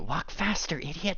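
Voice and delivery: muttering. Game narrator voicing a girl speaking up to the player: mumbling. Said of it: "she's kind of like mumbling up to you".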